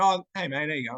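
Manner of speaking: plain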